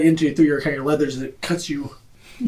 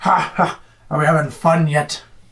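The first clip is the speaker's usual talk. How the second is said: mocking laugh in a character voice. Voicing a laughing axe-wielding enemy taunting a player: laughing mockingly in character. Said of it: "he laughs".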